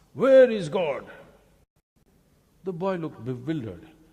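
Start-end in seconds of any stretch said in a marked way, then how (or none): 0.2-1.1 booming, thundering, very loud voice. Telling a story, voicing the priest asking the boy, booming voice. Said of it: "with a booming voice he asked".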